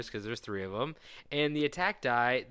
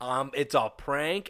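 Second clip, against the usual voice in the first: plain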